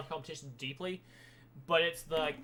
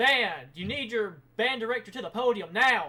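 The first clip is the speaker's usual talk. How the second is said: raised, high-pitched yelling; 6 semitones higher, 8 dB louder than usual. Band member retelling what he said at a performance warm-up, retelling a yell. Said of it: "basically yelling at us".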